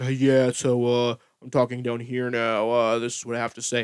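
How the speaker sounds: super deep, low bass voice. Imitating a lady who always talks super deep: very deep voice. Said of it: "her voice is, like, super deep. She's like".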